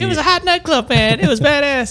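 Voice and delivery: very high, silly, funny little cartoon voice. Mocking the other speaker's story in a funny voice: funny voice imitating Isaac. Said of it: "we'll do a funny voice to pretend what you're saying".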